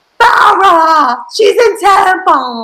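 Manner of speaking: high, stretched-out slow delivery. Explaining an earlier bit: Deborah from Teen Mom impression saying Tampa. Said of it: "my impression of Deborah from Teen Mom Saying Tampa".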